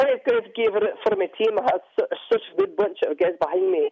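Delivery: very high, whiny put-on Scottish accent. Asked by the other speaker to do the scottish voice, performing a scottish voice. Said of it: "You still have the Scottish voice down".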